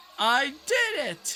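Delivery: squeaky voice breaking up, very high pitch. Playing a game, celebrating finishing a map: voice crack. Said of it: "that was kind of weird voice crack there".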